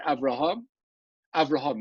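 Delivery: short break after the first name, between each repeat. Explaining how to read in the Torah: little pause between the two Avrahams. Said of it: "You have a little pause".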